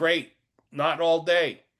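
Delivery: put-on Australian accent. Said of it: "yelled up in her Australian accent".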